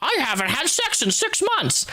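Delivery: put-on high-pitched elderly woman's voice. Suggesting a way to break the news, old lady voice. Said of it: "That is an old lady voice".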